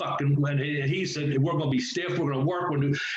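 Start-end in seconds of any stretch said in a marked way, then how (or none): none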